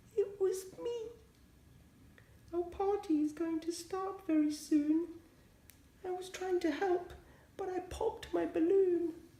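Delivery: very high, tiny, shaky, trembling voice. A hare answers the angry bear, in a shaky, small voice. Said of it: "Hare said in a shaky, small voice".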